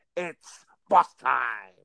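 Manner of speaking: loud ringside play-by-play announcer voice, called out. Name the winner of the match while discussing it, in a Michael Cole voice. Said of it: "in my cold voice".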